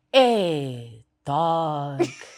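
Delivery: put-on loud tired drawl with stretched hey. Showing how people talk in Midrand: imitating tired Midrand slang. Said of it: "you just need to sound a bit tired".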